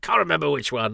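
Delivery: inaccurate mock Welsh accent. Imitating a friend pointing out a filming spot: wrong Welsh accent imitating Ed. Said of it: "that's actually the wrong Welsh accent to give Ed".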